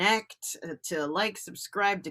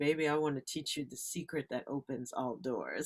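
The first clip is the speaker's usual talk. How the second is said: put-on poised, elegant older woman's voice; 7 semitones lower, 10 dB quieter than usual. Retelling advice from a professional speaker at a networking meeting: imitating an elegant older woman.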